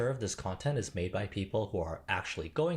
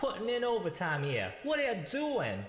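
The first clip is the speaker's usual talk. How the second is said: put-on New York accent, pitched up; 8 semitones higher than usual. Mocking an employer who praises overwork, voicing them: put-on new york accent. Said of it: "Is that his New York accent?".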